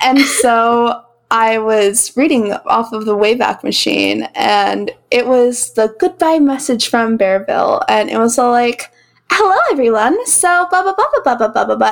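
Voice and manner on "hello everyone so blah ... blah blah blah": high, lilting, sing-song cashier-style voice. Retelling reading a goodbye message aloud: sounding like Chloe. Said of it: "You sound just like Chloe".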